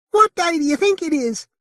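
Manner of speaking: put-on very high, squeaky voice. Reading a puppet show scene, the woman puppet speaks: squeaky voice. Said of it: "gave her a squeaky voice".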